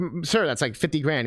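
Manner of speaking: ordinary talk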